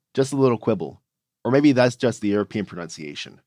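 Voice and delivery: ordinary talk, nothing marked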